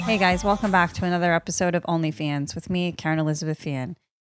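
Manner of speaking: dead-level deadpan monotone, no pitch movement at all. Opening a podcast episode with a new idea, the host introduces herself in a flat monotone. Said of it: "I'll be speaking like this and monotone".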